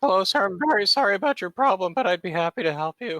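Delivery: put-on very high prepubescent young kid voice. Showing the voice used for customer service phone calls: prepubescent kid voice. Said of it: "my favorite voice to do; prepubescent kids".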